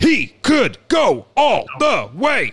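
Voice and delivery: stretched out, high, swooping pitch. Doing a voice for the others to guess: Chris Berman voice. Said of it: "I'll do a voice".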